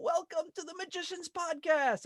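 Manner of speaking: play-acted, very high, bursting with enthusiasm. Saying a podcast's welcome line the way its host Scott says it, imitating Scott's enthusiasm. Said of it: "I said it kind of like Scott... his same level of enthusiasm".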